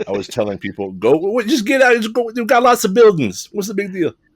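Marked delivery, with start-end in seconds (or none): 0.9-4.1 put-on very high, animated, swooping old Italian man voice. Retelling telling people to just get out, as an old Italian man. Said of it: "I became an old Italian man".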